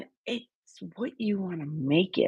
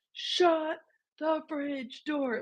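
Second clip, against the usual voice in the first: very high, far-carrying yell; 9 semitones higher, 4 dB quieter than usual. Retelling how a dad shouted across the house: imitating dad yelling. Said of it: "you can hear him across the house".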